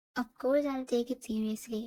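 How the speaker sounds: plain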